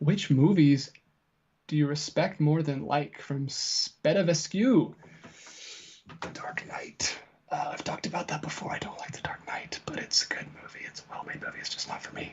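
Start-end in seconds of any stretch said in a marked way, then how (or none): 6.2-12.3 hushed whisper under the breath. Answering a viewer question about The Dark Knight: whispering. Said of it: "I'm whispering so everyone doesn't cancel me".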